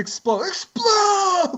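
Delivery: high, slow, drawn-out scream.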